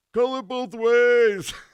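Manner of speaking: very high, very slow yell, words stretched. Imitating parents at a girls basketball game: imitating a parent yelling at refs. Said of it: "yelling at 'em or anything. Not, not like some of the parents".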